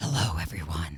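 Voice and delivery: very deep, very soft, hushed demon voice. Asked by the others to show off your demon voice, greet everyone in a demon voice. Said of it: "I have a demon voice".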